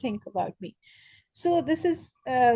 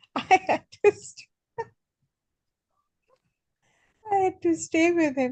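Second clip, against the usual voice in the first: pitched-up words breaking through stifled laughter; 6 semitones higher than usual. Recounting a frustrating memory, laughing while speaking. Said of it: "I'm laughing".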